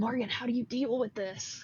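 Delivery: hushed, soft, secretive half-whisper. Playing a character who half-whispers a question into the lake: half-whispering. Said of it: "I'll kinda whisper into the lake".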